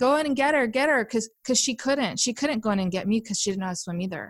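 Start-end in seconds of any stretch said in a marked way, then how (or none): 0.0-1.0 mock screaming, much higher. Recalling nearly drowning as a child, retelling her mother screaming. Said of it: "she's screaming".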